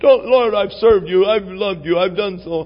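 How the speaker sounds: high, tearful, begging voice. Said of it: "insisting with tears, begging".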